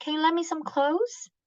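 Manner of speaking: question-like rising tune on "clothes". Example request in a lesson on question intonation, rising pitch on clothes. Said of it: "Going up".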